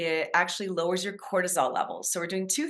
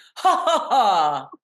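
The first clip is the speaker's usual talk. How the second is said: very loud, snooty "ha-ha-ha" laugh; 2 semitones higher, 9 dB louder than usual. Showing a listener how bones resonate, laughing ha ha ha very snobby. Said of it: "like very snobby".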